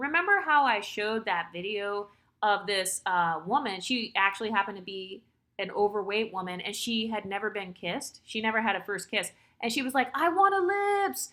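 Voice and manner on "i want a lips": mock screaming, higher pitch. Retelling a video of a woman screaming at the camera: imitating someone screaming. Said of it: "she was screaming at the camera".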